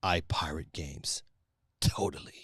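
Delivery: very low, deep, menacing sinister villain voice. Voicing someone's message as he imagines it, put-on sinister villain voice. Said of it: "with like a sinister villain voice".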